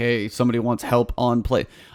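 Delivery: ordinary delivery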